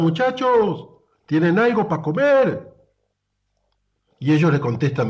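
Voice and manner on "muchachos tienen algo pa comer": high, loud shout carrying far. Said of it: "el tipo les grita".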